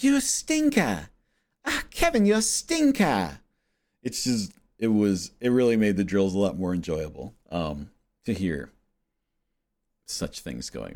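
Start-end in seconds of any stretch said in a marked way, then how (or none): 0.0-3.4 very high, sing-song, swooping coach voice. Retelling what the tennis coach said after a weird shot: imitating Bev. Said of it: "she'd be like".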